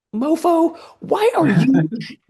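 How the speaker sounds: very high, exasperated, indignant squeal.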